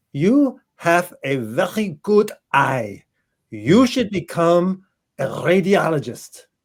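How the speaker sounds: put-on German accent, drawn out very slowly. Speaker quotes what a woman turned and told them, imitating a German accent. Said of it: "with her German accent".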